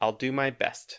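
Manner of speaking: put-on surly character voice. Speaker recapping an episode scene, surly Hoshi impression. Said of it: "She is being very surly".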